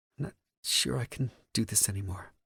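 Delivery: quiet little voice. A woman, her head on the narrator's shoulder, speaks in a small, quiet voice. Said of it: "she says in a small, quiet voice".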